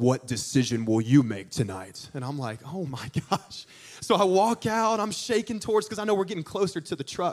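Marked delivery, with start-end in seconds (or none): 0.0-2.1 very low, deep, dramatic stage voice. Retelling a man at a play's end speaking into a microphone, deep voice. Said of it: "in this deep voice".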